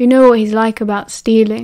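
ordinary delivery, nothing marked

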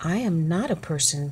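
plain reading voice

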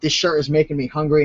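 ordinary talk

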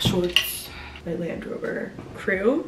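quiet whispering. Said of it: "I'm whispering 'cause Maddie's upstairs".

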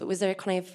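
ordinary delivery

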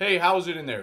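loud projecting call. Speaker retells calling to a woman inside a restroom from outside, retelling a booming call. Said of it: "my voice is kind of booming. It's projecting".

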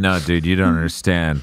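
low mocking tough-guy voice.

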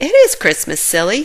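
with a light chuckle. Sky answers Marshall's excited remark; with a chuckle. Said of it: "Sky said with a chuckle".

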